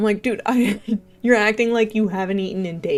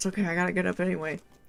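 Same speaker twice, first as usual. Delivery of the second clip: put-on mumbling under breath, much quieter; 2 semitones lower, 9 dB quieter than usual. Speaker retells getting up at two thirty and mumbling to herself, retelling mumbling under breath. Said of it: "distinctly remember mumbling under my breath".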